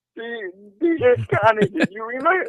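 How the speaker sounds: laughing while talking. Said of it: "He's already laughing".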